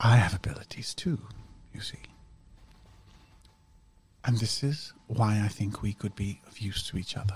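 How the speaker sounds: very quiet, barely-there, hushed speech. A game character talks to the player's character, speaking very quietly. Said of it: "She is speaking very quietly".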